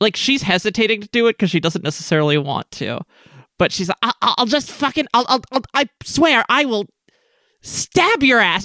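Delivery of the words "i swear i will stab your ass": nearly yelling, much higher pitch, slower. Game master voicing a character threatening the player, practically yelling. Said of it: "She's practically yelling at this point".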